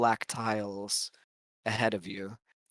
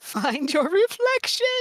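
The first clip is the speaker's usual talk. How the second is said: calling out in a high, loud voice; 6 dB louder than usual. Narrating a ghost attack as the game master, voicing Mother. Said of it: "you hear Mother's voice s-, saying".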